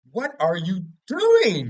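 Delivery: incredulous, loud, high disbelieving yell. Retelling watching and screaming at the screen, retelling screaming at the screen. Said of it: "I'm screaming at the screen".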